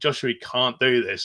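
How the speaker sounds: ordinary delivery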